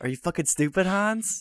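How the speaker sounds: very high-pitched delivery. Retrying a movie villain's line about an unloaded gun: second try at movie quote. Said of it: "Can I try again?".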